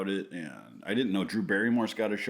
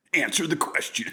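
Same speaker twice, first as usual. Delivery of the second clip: put-on booming arena announcer voice; 7 semitones higher, 4 dB louder than usual. Asking another speaker a question when asked to: Monster Jam voice. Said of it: "I'm gonna stick with that voice".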